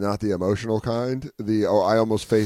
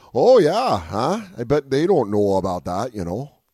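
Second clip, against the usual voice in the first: full-on fake Canadian accent, sing-song. Speaker retells lying to someone in a fake canadian accent. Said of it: "I went full lying Canadian".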